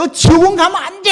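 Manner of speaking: high, loud, stern shout. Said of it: "하고 세게 말씀하신 거예요".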